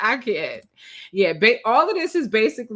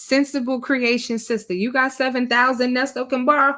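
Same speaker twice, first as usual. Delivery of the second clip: ordinary delivery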